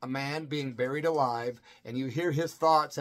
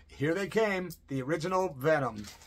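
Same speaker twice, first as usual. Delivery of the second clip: ordinary talk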